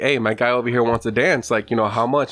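ordinary delivery

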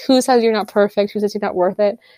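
plain

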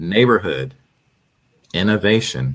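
very slow, deliberate, drawn out word by word. Giving the audience a website name without a slide, saying it very slowly. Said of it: "I'll say it slow and I'll say it twice".

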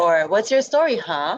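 put-on American accent. Trying out a name, the speaker says it in an American accent. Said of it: "American style".

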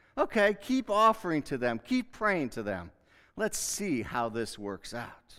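put-on sarcastic, taunting, challenging tone. Voicing God taunting stubborn people in a sermon: sarcastic God speaking. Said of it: "imagine God's being sarcastic here".

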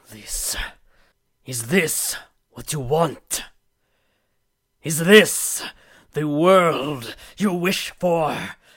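very loud, enraged, rising angry shout. Smashing objects against the basement walls, the character shouts: shouting. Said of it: "I am just shouting things like".

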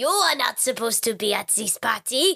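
put-on really bad French accent. Retelling a party story, quoting a man there: really bad French accent. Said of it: "doing a really bad French accent".

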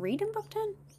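high confused squeak. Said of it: "I'm confused".

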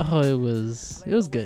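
flat and lukewarm. Answering how the weekend was: unenthusiastic. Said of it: "You said that with a lot of enthusiasm, huh?".

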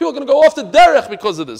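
high, loud, fast, upset and alarmed voice.

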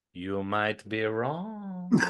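put-on, low, slow, worst-ever German accent. Speaker recapping alliances, quoting Colleen in a bad German accent. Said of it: "That was the worst German accent I think I've ever heard".

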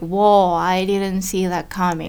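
plain

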